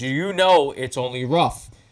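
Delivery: put-on snippy, attitude-filled tone. Retelling a member's question from behind on the fairway: imitating someone with an attitude. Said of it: "with an attitude".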